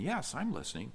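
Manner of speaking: hushed, soft, gentle and quiet. Retelling a wife answering her husband's accusation, retelling a soft reply. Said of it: "softly saying".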